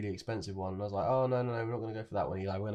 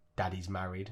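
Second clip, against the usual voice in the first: mock stern, serious, firm tone; 2 semitones lower than usual. Retelling how he turned around and answered: imitating a stern voice. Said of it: "he just turns around really sternly and goes".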